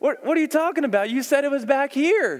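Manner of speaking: put-on indignant child's voice.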